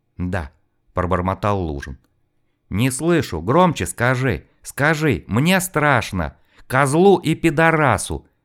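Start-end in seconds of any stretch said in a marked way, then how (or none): 2.7-8.2 high, menacing, insistent, demanding, threatening voice. A young man forces a frightened man to speak up; demanding order. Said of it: "требовательно приказал парень и угрожающе прищурился".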